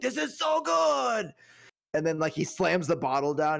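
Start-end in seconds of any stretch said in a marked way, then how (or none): 0.0-1.3 very high, drawn-out samurai voice. Retelling a scene where the samurai drinks sake: imitating a samurai drinking sake. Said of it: "He's like".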